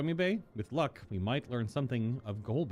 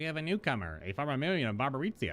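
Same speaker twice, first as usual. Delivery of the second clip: voice of a little impish creature. Voicing the imp as it tells someone about a newcomer, imp voice. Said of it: "My imp voice".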